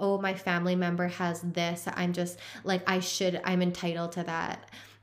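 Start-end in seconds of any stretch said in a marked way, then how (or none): none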